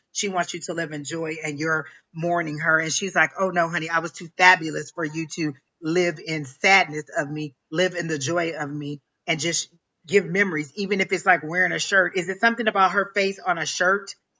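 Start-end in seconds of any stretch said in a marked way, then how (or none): none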